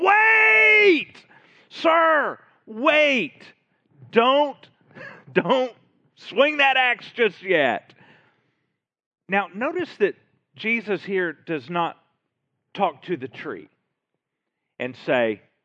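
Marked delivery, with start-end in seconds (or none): 0.0-7.9 very high, loud, long drawn-out yell. Acting out the gardener stopping the owner: Jesus yelling out. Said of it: "imagine him yelling out".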